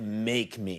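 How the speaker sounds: menacing, low, soft tough-guy growl.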